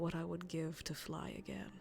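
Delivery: very quiet, soft, hushed whisper. Narrating a fireside scene as the character speaks: whispering. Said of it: "as he just whispers".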